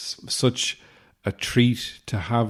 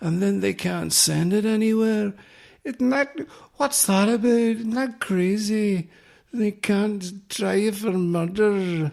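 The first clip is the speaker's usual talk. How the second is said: put-on Scottish accent, higher pitch; 11 semitones higher than usual. Doing the only Scottish impression he can manage: Scottish impression. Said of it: "the only Scottish impression I can do is".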